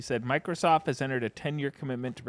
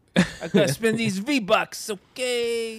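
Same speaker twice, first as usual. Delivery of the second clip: put-on very high, loud Brooklyn accent, "okay" stretched out; 10 semitones higher, 5 dB louder than usual. Answering a question about a Brooklyn Mario voice: Brooklyn Mario voice. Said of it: "is that your Brooklyn, your Mario Brooklyn?".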